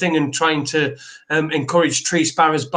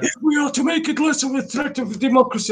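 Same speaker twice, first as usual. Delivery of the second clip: put-on Russian accent, much higher; 9 semitones higher than usual. Speaker demonstrates a quoted line as a dictator's speech; russian accent. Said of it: "you did a Russian accent".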